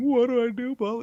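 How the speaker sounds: very high-pitched sobbing, pleading voice. Retelling a film scene where a character sits sobbing: imitating someone sobbing. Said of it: "when she's sitting there sobbing, going".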